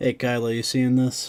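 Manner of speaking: very loud put-on New York accent, hollered. Calling out to Kyla while playing a game, New York accent. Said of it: "Why did I say that in a in a Boston accent?".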